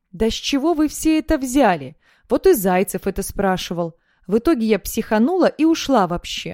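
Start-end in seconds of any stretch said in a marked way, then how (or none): none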